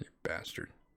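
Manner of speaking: low, soft, mocking whisper under the breath.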